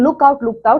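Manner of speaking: ordinary talk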